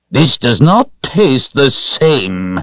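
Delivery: nasty, displeased queen voice, high and slow. Reading a queen's line in a story: mean voice. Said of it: "she said in her mean voice".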